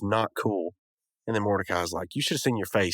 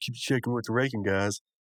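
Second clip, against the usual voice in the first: ordinary talk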